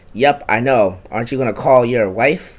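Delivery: ordinary delivery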